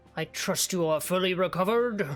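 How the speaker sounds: put-on voice of a big, tall man. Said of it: "Do I sound just like him?".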